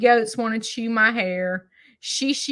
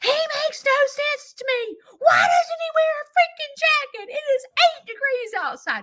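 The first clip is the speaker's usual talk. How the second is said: mock hollering, screaming fit, voice very high. Retelling yelling at a smart speaker during a timed grieving break: imitating own screaming. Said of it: "I'm screaming and hollering at Alexa".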